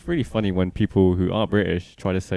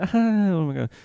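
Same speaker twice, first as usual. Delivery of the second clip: put-on very high, chatty valley girl accent; 12 semitones higher than usual. Telling of two chatty valley girls at a Walmart, in a valley girl accent impression. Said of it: "Great accent, great impression".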